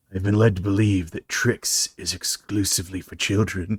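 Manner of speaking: low, soft, deadpan delivery. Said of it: "Ted movies, where he's like".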